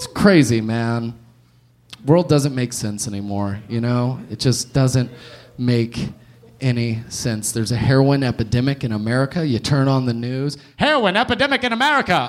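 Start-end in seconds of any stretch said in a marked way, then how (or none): 10.8-12.3 put-on old-time 1940s radio newscaster announcer delivery. Talking about the news, in a 1940s radio announcer voice. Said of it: "I don't know why I said that like a 1940s radio caster".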